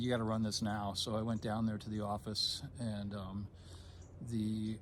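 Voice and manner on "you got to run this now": ordinary delivery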